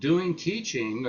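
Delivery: teaching emphasized. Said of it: "I underline the word teaching".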